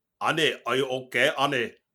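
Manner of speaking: loud put-on Russian accent. Quoting a line someone used to say, in a russian accent. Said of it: "in a Russian accent".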